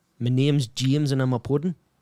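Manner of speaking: attempted put-on Geordie accent. Given a sentence to say by a friend, attempting a geordie accent. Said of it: "Give me a sentence to say in, in the Geordie accent".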